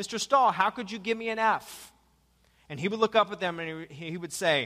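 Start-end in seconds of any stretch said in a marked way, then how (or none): 0.0-1.9 put-on flippant tone, higher. Retelling a student questioning a math teacher about a grade: imitating a flippant student. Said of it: "kinda look back at him kinda flippantly like".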